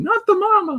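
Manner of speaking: shouting at very high pitch. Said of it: "keeps shouting".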